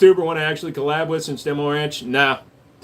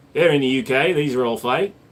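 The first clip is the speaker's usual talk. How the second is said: ordinary delivery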